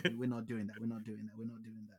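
low, flat, level, repeated delivery. Retelling how someone turned down a stat-padding plan: imitating someone refusing. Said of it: "and he's like".

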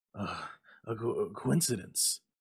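stammering, stuttering. The old man answers his wife, stammering. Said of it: "stammered the old man".

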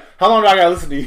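play-acted tough, hard tough-guy tone. Retelling what someone in a clip said: imitating a changed tough tone. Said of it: "you hear how the lawyer's tone changed?".

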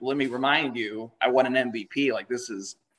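normal talking voice

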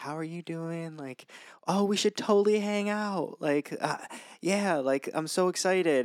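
fake-nice service voice. Mocking how people they talk to sound; fake-nice customer service voice. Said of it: "having their like customer service voice".

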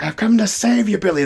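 unhinged, manic judge voice, very high-pitched cry. Retelling a film scene, voicing the judge coming to rescue billy: imitating a manic judge. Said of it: "The judge has gone, like, manic at this point".

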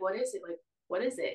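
mock terrified, insistent, repeated, scared tone. Retelling asking what was happening when told to leave: retelling own terrified question. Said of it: "So I'm, like, terrified".

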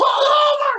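very high, drawn-out scream at the top of lungs. Retelling screaming at the driver from the back seat, re-enacting a scream. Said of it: "Screaming on top of my lungs".

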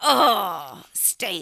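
mock frustrated, cranky whining. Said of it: "you're pissed".

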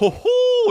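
very high, squeaky ho-ho laugh. Imitating how a former roommate used to talk and laugh: imitating a friend's laugh. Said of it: "he used to talk like this, man".

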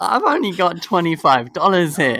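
play-acted awkward tone, fighting back a giggle. Recounting an awkward moment to a listener, retelling while stifling a laugh. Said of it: "trying not to laugh because it was like awkward".

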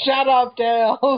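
very high, shrill, loud, obnoxious, jerky cartoon voice. Recalling a Sonic cartoon, the speaker quotes Sonic to Tails: douchey Sonic impression. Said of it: "Sonic sounds like a complete douche".

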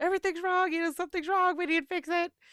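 shrill, very high-pitched, urgent screaming. Retelling a scene where Loki runs up yelling: imitating Loki screaming. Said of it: "just screaming".

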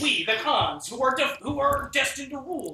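very loud, very high, screamed speech. Imitating a narrator who screams the Genghis Khan quote: Dan Carlin screaming a quote. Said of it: "Blasting out the speech".

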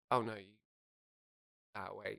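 mock hushed, very soft, campy, suggestive, loaded murmur. Retelling the head hairdresser's reply to a voice note: imitating a suggestive camp hairdresser. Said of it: "he said it in such a way, it was, like, kind of sexual".

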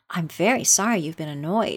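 ordinary talk

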